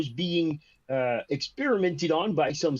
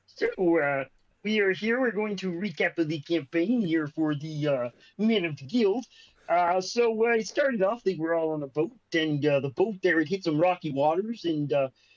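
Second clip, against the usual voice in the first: felt-puppet frog character voice. Recapping a campaign in a voice someone requested, Kermit the Frog voice. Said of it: "the Kermit the Frog voice, so I'll try my best".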